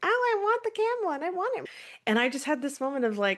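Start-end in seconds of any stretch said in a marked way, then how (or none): 0.0-1.6 put-on very high, whiny, whining child's voice. Retelling a son asking for a toy camel: imitating a child whining.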